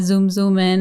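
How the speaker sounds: normal talking voice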